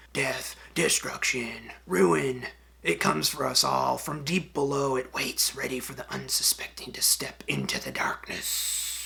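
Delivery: ominous, doom-laden whisper muttered under the breath. Showing an NPC letting players into a crypt, the speaker voices Thurmold Smeat whispering to himself. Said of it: "he whispers to himself something like".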